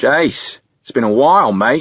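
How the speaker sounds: put-on high, loud Australian accent. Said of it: "His Australian accent is his tell".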